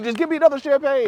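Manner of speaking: put-on loud voice. Retelling a friend at the pedicure asking the lady for more: imitating someone talking real loud. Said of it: "He real loud".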